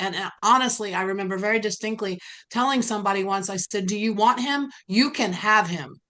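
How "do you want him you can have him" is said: venomous, cutting, venom-laced tone. Retelling what she told an admirer of her abuser: retelling words said with venom. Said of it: "I spoke those words with such venom".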